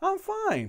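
genuine, untroubled, sincere, reassuring very high voice. Showing how a wife could say she is fine: imitating a sincere I'm fine. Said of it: "they could say it maybe like this".

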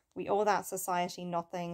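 normal talking voice

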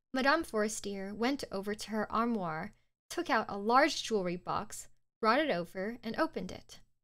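ordinary delivery

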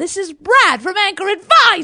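posh put-on British accent. Guest introduces himself at the start of the episode, in a put-on british accent. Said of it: "we don't need a British accent".

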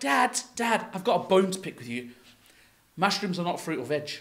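usual speaking voice

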